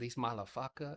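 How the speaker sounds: put-on Vietnamese accent. Speaker imitates a golf guy from South Carolina: Vietnamese accent. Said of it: "who has a Vietnamese accent".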